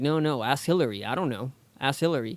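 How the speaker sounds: ordinary delivery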